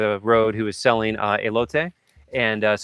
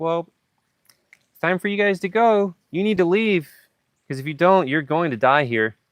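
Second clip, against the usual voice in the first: higher, casual, sweet, nonchalant grandmotherly tone; 7 semitones higher than usual. Retelling what a woman who hosted them said at the end, imitating nonchalant grandmotherly tone. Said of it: "In like the most nonchalant, like grandmotherly kind of way".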